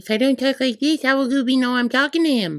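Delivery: very high-pitched dog-talk voice. Dog owner defending how they talk to the dog: high-pitched voice for dog. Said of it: "use a high pitched tone of voice".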